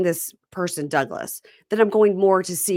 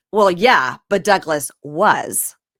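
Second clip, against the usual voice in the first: raised, a little condescending, talking-down tone; 5 dB louder than usual. Retelling a line from a show: imitating a condescending tone. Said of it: "a little condescendingly".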